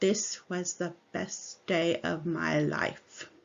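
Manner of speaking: very flat, slow, level monotone delivery. Speaker quotes a student who said this flatly, imitating a flat monotone. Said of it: "it was just a very flat".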